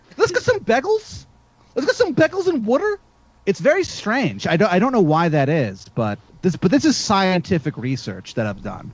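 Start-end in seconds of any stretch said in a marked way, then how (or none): 0.2-3.0 very high-pitched Philadelphia accent. Speaker shows how people from philadelphia talk, in a philadelphia accent impression. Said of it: "they speak like this for some reason".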